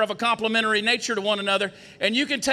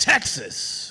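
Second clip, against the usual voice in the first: heavy emphasis on the word Texas; 8 semitones lower than usual. Speaker showing how stress changes a phrase, stress on Texas. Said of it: "you can put emphasis on any word".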